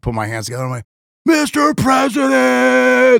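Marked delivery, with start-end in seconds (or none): 1.3-3.2 very high, ragged, rough shouted scream. Retelling calling out to the president for a photo, retelling a scream. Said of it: "screams like".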